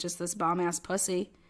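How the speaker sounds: ordinary talk, nothing marked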